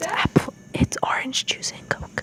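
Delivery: breathy whisper, kept hushed. Telling the next ingredients so the taster can't hear: whispering.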